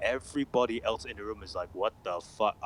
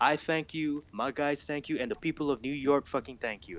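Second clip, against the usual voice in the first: clumsy, put-on New York accent, pitched up; 6 semitones higher than usual. Speaker discussing a game's characters quotes a memorable one, Captain Benitez New York accent. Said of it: "I can't do the accent very well. I'm not a New Yorker".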